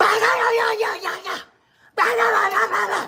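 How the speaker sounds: high-pitched gangster-style shouted yelling tirade. Mocking street dudes who yell at the phone: imitating street dudes yelling at the phone. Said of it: "Why you on here yelling at y'all phone?".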